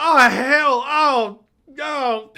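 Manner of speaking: very loud, very high, very slow cry of pain. Voicing a man struck in the back with an axe: yelling in pain. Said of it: "And he yells, he yells".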